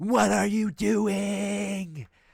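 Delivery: acted-out gut-wrenching, very high, drawn-out scream. Retelling a man's yell overheard from outside, imitating a gut-wrenching scream. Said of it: "Gut wrenching scream".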